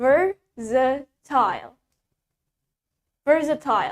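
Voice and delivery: British-accented pronunciation. Teaching English vocabulary, the teacher pronounces the word in a British accent. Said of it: "That's in British accent".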